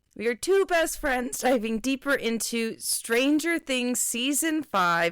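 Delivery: voice cracking on a word. Introducing the podcast alongside a best friend, voice cracking. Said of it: "I did have a voice crack".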